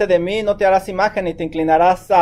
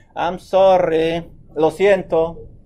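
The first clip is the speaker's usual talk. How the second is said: drawn-out, very slow, grudging and insincere tone. Acting out a child told to apologize: imitating an insincere sorry. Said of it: "con una actitud incorrecta dicen".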